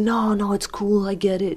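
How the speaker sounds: New York-accented speech.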